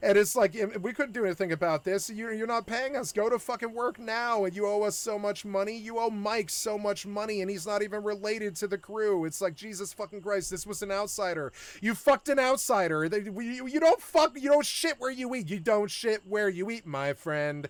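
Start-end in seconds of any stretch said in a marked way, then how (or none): none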